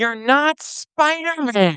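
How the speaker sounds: loud, high-pitched shout. Describing a clip where a boy in a Spider-Man costume argues with his mother, imitating a mother yelling. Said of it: "the mother yells from the other room".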